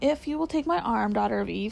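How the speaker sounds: ordinary delivery, nothing marked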